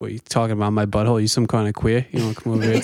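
put-on New York accent. Asked whether being from New York makes them angry, answering in a New York accent. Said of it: "do the rest of the podcast in your New York accent".

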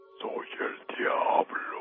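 dreadful, horrible whispered devil voice. Recalling a voice at his right ear while half asleep: horrible devil's voice. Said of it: "con esta voz ... se oyó muy horrible".

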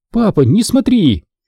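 startled, scared, high frightened outcry. A young woman jumps up and cries out to her father; frightened cry. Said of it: "Она испуганно подскочила и вскрикнула".

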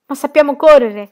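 very loud, high-pitched shout. Reading a character's reply as the flood chases them: shouted. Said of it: "gridò TK".

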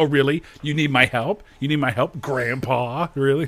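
put-on sassy voice, mocking. Retelling how a movie's hacker answers her boss: imitating a sassy hacker. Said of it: "all the hackers are sassy".

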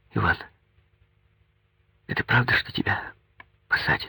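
anxious, worried, hushed half-whisper. After binding his hand, she looks into his eyes and asks, anxiously. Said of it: "тревожно заглядывая в глаза ему".

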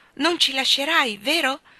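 worried, nervous. Narrator reads a character repeating an unanswered question, anxious. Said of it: "Ripeté ansioso".

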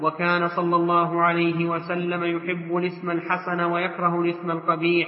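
ordinary delivery

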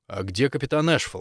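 plain reading voice

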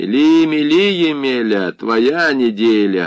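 slow, derisive, taunting, mocking jeer. Reading the reply from behind the door to Masha's warning, mocking. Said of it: "насмешливо произнесли".

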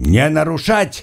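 sharp, high, barked delivery. A guard cuts in on a prisoner's outburst; sharp shout. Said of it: "прикрикнул надзиратель".

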